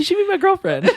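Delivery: high-pitched, laughing delivery.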